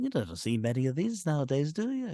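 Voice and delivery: put-on very thick, heavily laid-on Scouse accent. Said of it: "his Scouse accent is so much thicker".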